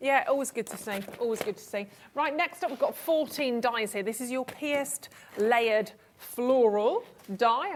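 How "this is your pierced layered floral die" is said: very slow, deliberate, each word spaced out. A craft show host introducing a die on air, very slowly. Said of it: "I said that very slowly".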